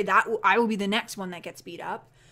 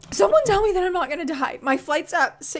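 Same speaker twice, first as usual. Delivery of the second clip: near tears, pleading, pitched up; 9 semitones higher, 4 dB louder than usual. Talking about an early flight she fears, starting to cry. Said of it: "I'm starting to cry".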